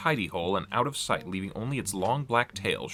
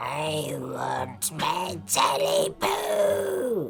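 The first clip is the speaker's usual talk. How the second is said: high, hoarse, croaking voice; 6 semitones higher than usual. Reading the story aloud, a voice croaks from the darkness: high hoarse croak. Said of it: "A high, hoarse voice croaked from the darkness".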